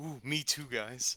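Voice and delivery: very slow, drawn-out character voice. Stepping into the group as Vern: Vern's voice. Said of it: "Vern steps into the group and goes".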